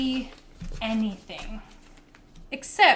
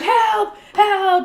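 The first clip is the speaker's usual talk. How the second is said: high, loud yell.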